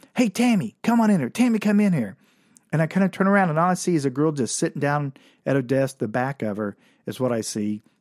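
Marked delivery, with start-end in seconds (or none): 0.2-2.2 high, raised hollering voice. Retelling a meeting, imitating how the man in the office yelled out. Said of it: "he yells out".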